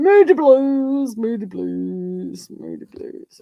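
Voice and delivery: talking through laughter, "blues" drawn out. Speaker reacting to someone being moody, laughing while talking. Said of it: "I'm laughing because they're moody".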